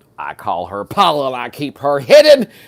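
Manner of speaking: big, loud, swooping put-on TV-style delivery. Speaker performs a favorite season-eleven quote, doing the whole quote voice. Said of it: "I gotta do the whole voice".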